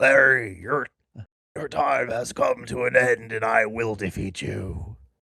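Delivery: put-on voice, slow and drawn out. Telling an improvised story, voicing RFK Junior confronting a lobster monster: RFK Junior voice. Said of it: "I've lost my R F K Junior voice".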